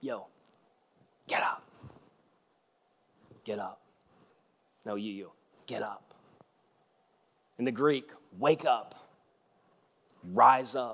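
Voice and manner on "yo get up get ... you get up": very soft, hushed whisper. Retelling a healing moment, Jesus leaning down to a man: imitating a whisper. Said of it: "I think whispers to him".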